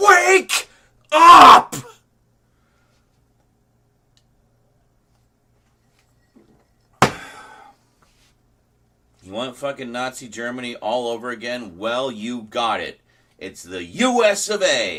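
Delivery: very loud, high, enraged, swooping pitch. Venting about the state of the world: angry venting. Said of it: "I'm angry and I need to vent".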